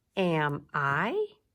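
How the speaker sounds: am I with pitch lifting on I. Practicing again how the voice goes up on a question, rising question intonation. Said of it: "So let's practice that again".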